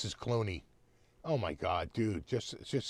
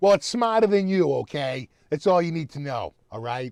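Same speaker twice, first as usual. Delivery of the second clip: put-on stock Boston accent, very loud and high; 5 semitones higher, 9 dB louder than usual. Acting out a guy's reply about a smart car, in a typical boston accent. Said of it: "That's your typical Boston".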